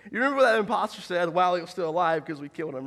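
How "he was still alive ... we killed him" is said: ordinary talk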